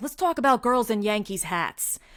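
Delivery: put-on New York accent. Retelling a reel a New Yorker posted, New York accent. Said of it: "so he had a great accent".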